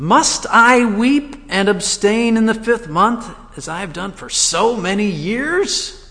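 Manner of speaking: mock whiny, complaining tone, high-pitched. Explaining the tone of the question in verse 3, in a whining tone. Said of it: "I hope you can hear the whining tone in that".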